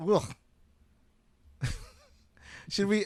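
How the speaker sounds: words breaking through laughter. Cracking up during a group conversation, laughing while talking. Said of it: "Sorry, I'm just cracking up".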